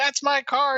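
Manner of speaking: acted-out man yelling. Telling a story of a guy from next door catching someone smashing his car: retelling a yell. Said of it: "he's yelling".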